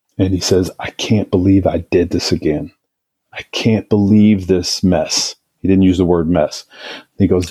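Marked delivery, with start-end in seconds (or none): 0.2-5.4 put-on tearful pleading voice. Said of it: "he's saying this through tears".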